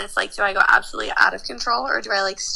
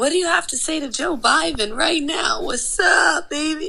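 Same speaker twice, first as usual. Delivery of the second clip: obnoxious, annoying tipsy voice, pitched up; 7 semitones higher than usual. Recalling videos of approaching strangers in a bar, imitating own annoying drunk voice. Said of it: "In my already annoying drunk voice".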